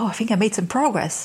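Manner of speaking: ordinary talk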